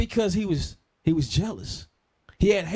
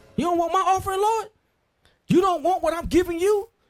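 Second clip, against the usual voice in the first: mock, very high, angry and indignant outcry; 11 semitones higher than usual. Retelling the Bible story of the rejected offering, acting out the lines: angry Cain voice. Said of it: "Cain was mad".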